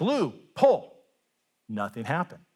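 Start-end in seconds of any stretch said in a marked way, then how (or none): 0.0-0.9 high, hollered yell. Telling a story, the farmer calls out to the mule: retelling a yell. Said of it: "he yells out at the mule".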